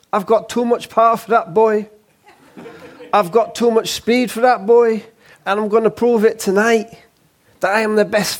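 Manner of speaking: put-on swaggering, Cockney-tinged wide-boy accent. Quoting his boast before the 2001 Barrera fight, Cockney-tinged wide-boy accent. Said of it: "he had this bit of a sort of Cockney wide boy thing going on. And believe it or not, that was a really good impression of him".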